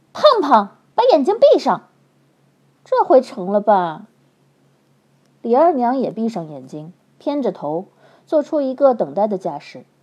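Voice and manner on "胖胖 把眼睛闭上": loud, high, barked bellowing. Reading a story aloud, Li Erniang orders the cook to shut her eyes: loud barking shout. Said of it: "她大喝一声".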